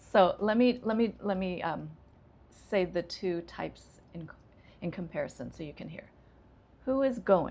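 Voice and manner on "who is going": pitch falls down on going. Demonstrating a question type for listeners to compare, with falling intonation. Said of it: "It goes down".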